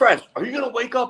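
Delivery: scolding yell, pitched very high. Retelling being yelled at during a game, imitating Coach Jones yelling. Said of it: "Coach Jones yells at me".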